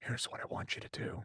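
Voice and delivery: very quiet, hushed, secretive whisper. Retelling how Paul pulled him aside, in a whispered Paul Heyman impression. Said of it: "in the Paul Heyman voice".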